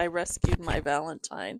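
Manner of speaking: ordinary delivery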